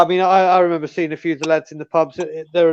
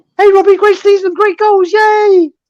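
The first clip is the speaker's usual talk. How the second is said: very high, loud, starstruck gushing voice; 6 dB louder than usual. Retelling what he said on finally reaching a player: much higher-pitched voice. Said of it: "my voice was a hell of a lot higher".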